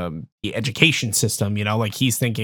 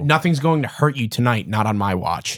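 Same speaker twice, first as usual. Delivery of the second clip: ordinary talk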